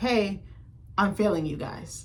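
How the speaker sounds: plain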